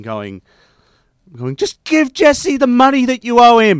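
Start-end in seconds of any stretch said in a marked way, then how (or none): 1.6-3.8 put-on scream, higher and louder. Retelling screaming at him while watching an episode: imitating own screaming. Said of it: "I was screaming at it, at him".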